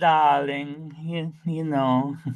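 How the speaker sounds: slow, drawn-out, purring impression voice. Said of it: "you sounded like, uh, Ava Gabor".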